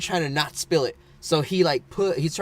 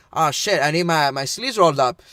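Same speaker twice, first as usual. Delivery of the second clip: imitated Mexican accent. Retelling what he said, gloves on and about to pour, in a Mexican accent. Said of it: "He has a Mexican accent".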